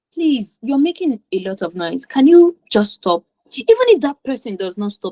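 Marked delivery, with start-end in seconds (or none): none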